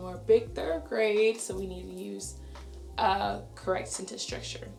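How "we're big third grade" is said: big third grade stressed, proud, slow and louder. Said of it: "I love to tell that to them".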